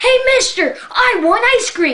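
very high, loud hollering. Speaker recounts chasing an ice cream truck, retelling own past yell. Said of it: "And I'm yelling".

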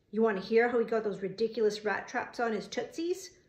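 ordinary talk

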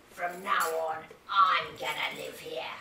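low, loud, hissing rat voice. Narrating a story, the rat answers the two mice in the burrow, hissing rat. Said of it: "the rat hissed".

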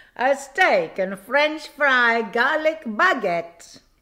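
put-on accent mixing Italian and French. Showing off a finished steak baguette on camera, in a mock Italian-French accent. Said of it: "I think I was going for Italian and French at the same time".

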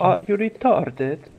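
clumsy put-on Russian accent. Speaker tries out the line he just proposed for the group: attempted Russian accent. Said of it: "somebody has a Russian accent and can say".

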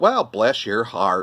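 sweet, charming Southern US drawl. Talking about loving american accents, showing the southern american accent. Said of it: "So like the Southern charm, you can sit there and go".

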